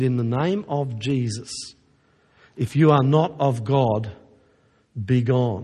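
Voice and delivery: trembling, quavering words, slow and shaking. Retelling how a woman holding her Bible spoke to a being, imitating a shaking voice. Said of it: "in a shaking voice she said".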